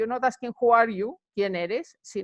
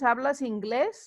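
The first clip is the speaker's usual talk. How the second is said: rising pitch at the end of inglés. Spanish lesson on asking questions, pitch rising at end of inglés. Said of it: "with the questions, ... you go up a bit".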